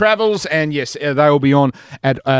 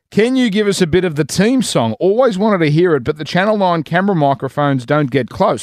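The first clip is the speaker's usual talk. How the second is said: plain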